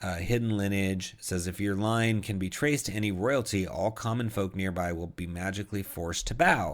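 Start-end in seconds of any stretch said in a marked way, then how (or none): none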